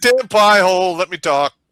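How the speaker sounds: very loud, forceful, booming, high military drill shout. Showing how military command talk would work in a debate, in a forceful command voice. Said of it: "be very forceful".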